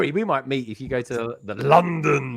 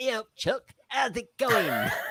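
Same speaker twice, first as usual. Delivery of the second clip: very high, unhurried, friendly voice; 9 semitones higher, 5 dB quieter than usual. Imitating how Craig would greet someone, imitating Craig's high voice. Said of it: "I think he's got quite a high voice".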